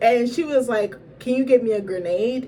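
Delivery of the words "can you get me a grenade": normal talking voice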